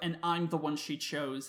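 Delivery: normal talking voice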